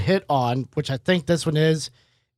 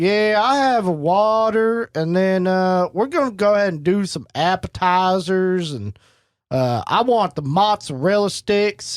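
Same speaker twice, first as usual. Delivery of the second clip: put-on rural country accent; 2 semitones higher than usual. Retelling someone ordering from a waiter, country accent. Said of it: "ordered the entire time in a country accent".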